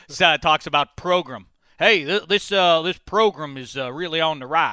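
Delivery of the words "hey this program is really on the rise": bad fake Southern drawl, higher and louder. Imitating someone from West Virginia talking about the program, bad fake Southern drawl. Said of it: "Your Southern accent, [name], is awful".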